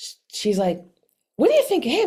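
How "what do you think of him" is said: very high, raised, all-excited voice. Retelling what the shelter worker asked about the cat: imitating someone excited. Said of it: "She was, like, all excited".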